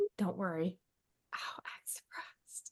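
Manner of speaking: soft, low, hushed whisper. Recounting how a guy got down to a low voice, retelling his whisper. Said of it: "like whispering".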